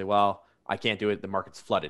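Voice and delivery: ordinary talk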